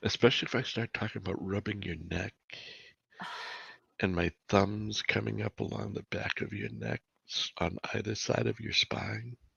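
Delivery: put-on low soft voice. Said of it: "lower the tone of my voice".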